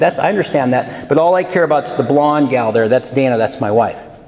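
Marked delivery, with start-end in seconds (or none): none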